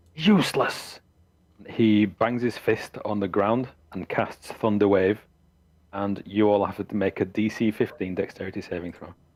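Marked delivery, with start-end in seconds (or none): 0.2-1.0 furious, raging, enraged high-pitched shout. A game master as Strahd, enraged the players came back empty-handed: enraged shout. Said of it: "And he just shouts".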